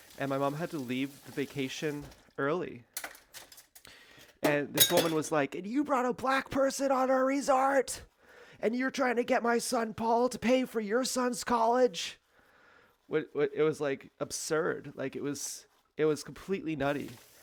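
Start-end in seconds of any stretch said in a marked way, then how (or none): 5.5-12.2 very high, loud, shrieking, screaming outburst. Retelling what a resort owner screamed at the family: imitating Myrtle screaming. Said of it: "screaming at us".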